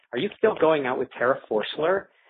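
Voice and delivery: mock snooty, snotty, superior, condescending tone. Retelling Erin walking up at the pool, the speaker imitates her snotty question. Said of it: "she said in the snottiest tone of voice imaginable".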